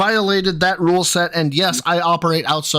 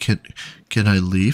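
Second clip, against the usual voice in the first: mock meek, timid, cowering little voice; 10 semitones lower than usual. Retelling a stream moment where Cat looks huddled down: imitating Cat huddled down, timid. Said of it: "huddled down".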